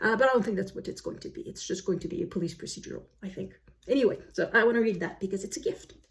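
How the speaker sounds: rushed, very fast chatter. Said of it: "I'm speaking very, very fast today".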